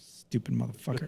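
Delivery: very quiet mutter under the breath. Retelling muttering an insult after reaching another aisle: retelling a muttered insult. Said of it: "under my breath".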